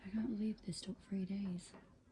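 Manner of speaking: hushed whisper. Speaking while the kids are in bed, whispering. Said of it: "I'm whispering because the kids are in bed".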